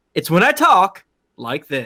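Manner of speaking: put-on news anchor delivery. Describing switching into a voice for fun, put-on newscaster voice. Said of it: "switching into like newscaster voice".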